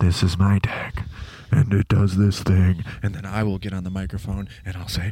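ASMR video host voice. Joking about a future solo deck episode: mock ASMR voice as Jordan. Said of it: "Welcome to A S M R Deck Tech".

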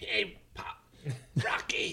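breathy near-whisper, breathed out. Asked by the others to give them a Mickey from the Rocky films, do a Mickey impression. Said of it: "Can you give us a Mickey?".

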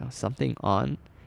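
ordinary delivery

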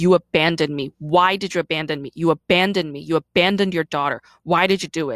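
heated, angry, insistent, hard-pressing shout. Retelling confronting her mom about being abandoned: imitating own angry yelling. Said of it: "I got angry".

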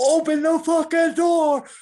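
full-on, high, loud, furious raging scream. Retelling how a man screamed at a girl, retelling a scream. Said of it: "he's like screaming at this girl".

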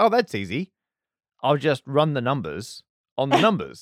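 normal talking voice

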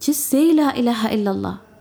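play-acted, high, loud screaming through tears. Retelling an urgent phone call from the stepmother: imitating someone screaming. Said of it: "She started screaming".

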